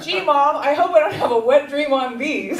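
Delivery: loud, clear carrying voice. Retelling what a boy said to his mom while buying sheets, in a loud, clear voice. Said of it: "he says in a loud, clear voice".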